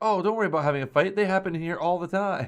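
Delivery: fast, airy, totally ditzy waitress voice. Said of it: "the waitress who's just, like, totally ditzy".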